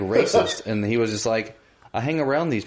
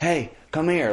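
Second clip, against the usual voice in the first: put-on pleading child voice, pitched higher; 6 semitones higher than usual. Retelling how children at a harbor fence called out: imitating begging children.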